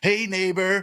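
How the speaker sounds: put-on, shrill, loud, very high screaming yell. Retelling a film scene where Frank shouts and screams: imitating Frank shouting. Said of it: "he starts shouting and screaming, and he's just like".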